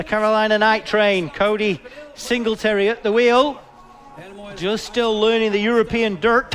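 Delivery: clumsy, badly done put-on American accent. Introducing a driver at the wheel: bad american accent. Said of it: "That was a bad American accent".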